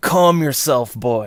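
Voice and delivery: stern, severe voice, echoing. A figure in the woods tells Robert to calm down; stern voice. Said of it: "he's got a pretty stern voice now".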